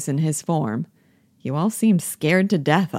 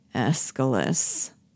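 quiet, tired, weary, disgusted tone; 3 semitones lower, 5 dB quieter than usual. In a play, answering an order to read his Aeschylus and be quiet: weary disgust. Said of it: "with weary disgust".

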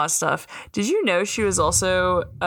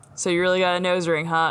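ordinary talk

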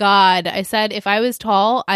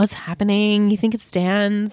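put-on whisper. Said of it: "Whispering to the baby".

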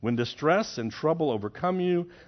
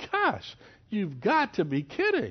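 put-on amused, incredulous half-laugh, pitched up, swooping; 6 semitones higher than usual. Voicing wisdom shaking her head at foolish choices: laughing in disbelief.

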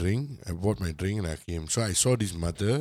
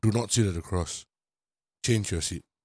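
put-on very stern voice. Retelling what a safety ambassador told a boy about his seat, mock-stern. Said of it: "told him in a very stern voice".

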